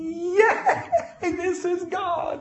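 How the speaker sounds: high, laughing holler of joy. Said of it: "she hollered".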